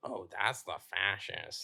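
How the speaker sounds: slow, drawn-out, peculiar drawling speech. Retelling what Matthew said when they met in the backyard: imitating Matthew. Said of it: "that's literally how he talks".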